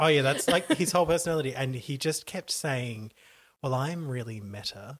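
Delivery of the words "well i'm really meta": put-on vapid American accent, slower. Retelling what a millionaire kept saying, in a vapid American accent. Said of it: "in like a vapid American accent".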